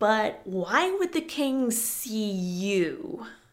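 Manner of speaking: slow, scornful, contemptuous, slightly hesitant tone. Narrator reading a man answering a woman's plan about the king; contemptuously. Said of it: "he asked contemptuously".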